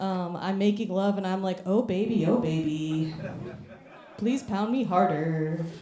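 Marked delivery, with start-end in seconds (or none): 1.6-5.6 put-on slow, polite, courteous customer service voice. Joking that her customer service voice never switches off, even making love; customer service voice. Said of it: "the customer service voice doesn't come off".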